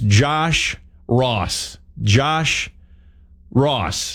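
slow, deliberate delivery. Radio host trying a tongue-twister artist name, saying it slowly. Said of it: "I have to say it slow".

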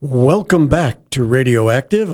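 speaking from the diaphragm. Radio host opening the show's segment to listeners, in a diaphragm voice. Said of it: "I'm using my diaphragm voice".

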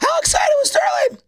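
messed-up voice. Asking another speaker a question: voice all messed up. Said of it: "my voice is all messed up".

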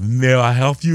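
put-on Russian accent. Quoting the man welding over his carpet when he looked up, russian accent. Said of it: "like kind of like Russian accent".

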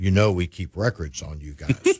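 put-on deep, laid-on French accent. Retelling what a man said to him in his office, in a deep french accent. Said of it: "deep French accent".

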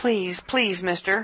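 pleading, begging tone. Reading a story aloud, voicing a frightened passenger: begging. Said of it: "Kitty begged".

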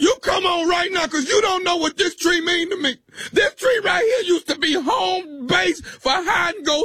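fake crying, shouting through tears. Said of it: "Are you crying?".

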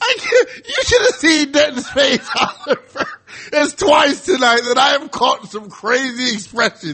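high-pitched chatter spoken through laughter.

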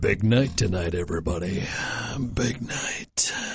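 very deep, soft movie trailer announcer voice. Radio host says hello to the second shift crew in a movie guy voice. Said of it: "Why are you talking like that?".

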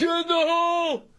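high-pitched, loud shouted delivery. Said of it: "Somebody say".

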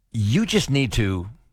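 slow, drawn-out, most condescending way. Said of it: "in our most condescending way".

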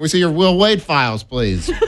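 put-on nerdy voice, pitched very high. Voicing the other person in a bit, nerdy voice. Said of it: "This nerdy ass voice you're giving me".

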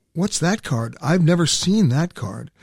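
usual speaking voice

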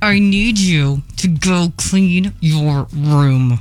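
put-on tight-lipped talk through clenched teeth. Recalling her mom ordering her around, imitating mom talking through her teeth. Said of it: "she would be talking through her teeth".

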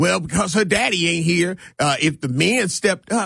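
ordinary talk

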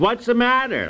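loud, high blurted speech. Explaining why women miss discreet signals, retelling their reply in a loud voice. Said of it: "they say in a loud voice".

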